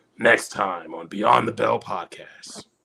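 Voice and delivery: epic, dramatic anime announcer narration voice. Closing the podcast, announcing the next episode in the Dragon Ball Z voice. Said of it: "You gotta say it in the Dragon Ball Z voice".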